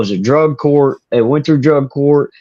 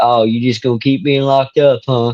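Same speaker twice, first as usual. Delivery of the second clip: normal talking voice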